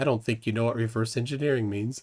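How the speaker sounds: mock dry deadpan, dropped far low. Retelling another speaker's remark about reverse engineering: imitating a deadpan line. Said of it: "Just deadpan".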